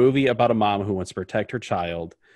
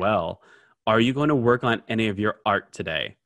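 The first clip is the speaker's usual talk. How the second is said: put-on, very mocking tone. Retelling a scene where a man speaks to his wife, acting out a very mocking tone. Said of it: "in a very mocking tone".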